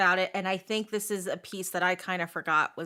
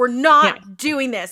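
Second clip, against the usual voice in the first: very loud, booming, drawn-out all-out bellow; 5 semitones higher, 11 dB louder than usual. Retelling a book scene where a character refuses a vote: imitating Rowan yelling at the top of his lungs. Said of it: "yelling at the top of his lungs".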